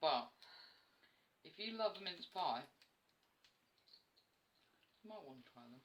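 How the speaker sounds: speaking between bites while eating. Vlogger recommends mince pies to viewers while eating on camera, talking while eating. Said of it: "Sorry for eating on camera".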